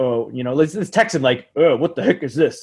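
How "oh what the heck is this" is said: astronaut-style voice, complaining. Picturing a friend's impression, complaining about squid salad: Neil Armstrong impression. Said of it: "[name] doing his impression of Neil Armstrong".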